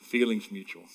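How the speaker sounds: soft, quiet tone. A father retells his daughter's reply to him, quietly. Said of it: "she just quietly goes".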